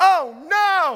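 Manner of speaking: woman's loud, high screamed cry. Retelling how the house owner reacted downstairs: imitating a woman screaming. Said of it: "She literally screams".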